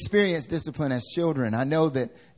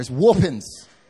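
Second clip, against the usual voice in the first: "whoopings" drawled in southern accent, louder; 6 dB louder than usual. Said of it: "Said it just like that".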